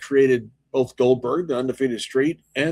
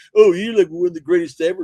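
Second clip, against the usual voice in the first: put-on condescending tone; 4 semitones higher, 6 dB louder than usual. Guest mimicking the interviewer's praise of him, mock-condescending voice. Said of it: "Like your condescending voice".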